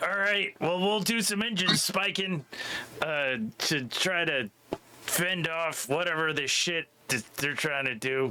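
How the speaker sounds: high-pitched, in-character voice calling out. Playing a character during a ship chase who yells up to others: yelling up in character. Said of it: "and I'll yell up".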